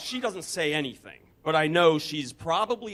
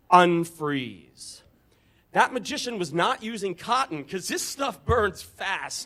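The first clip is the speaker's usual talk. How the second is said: normal talking voice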